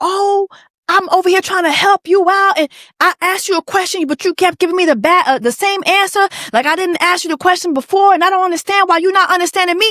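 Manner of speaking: put-on woman's voice, high, arguing back hard. Retelling a woman arguing with a drunk man: imitating a woman arguing. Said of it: "she starts arguing with this man".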